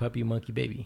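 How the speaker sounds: plain, even delivery at normal pace. Repeating a commercial's name when asked to: said fast. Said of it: "Say it fast then".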